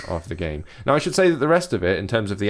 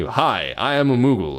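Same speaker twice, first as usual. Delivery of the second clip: very slow, thick, drawn-out American drawl; 3 semitones higher than usual. Mocking Final Fantasy's talking Moogles, the speaker plays a Moogle with a mock thick American drawl. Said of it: "and I have a thick American drawl".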